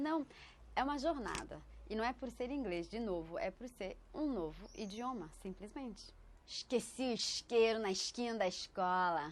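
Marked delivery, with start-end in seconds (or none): 6.5-9.3 Carioca accent from Rio de Janeiro. Demonstrating regional accents in Portuguese: Carioca Rio accent. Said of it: "É o sotaque carioca".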